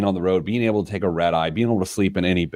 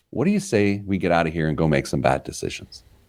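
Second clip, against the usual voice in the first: hushed near-whisper; 2 semitones lower than usual. Retelling what a guy said as he stood up: imitating a near-whisper. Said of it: "just above a whisper".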